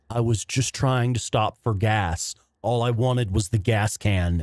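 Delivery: ordinary talk, nothing marked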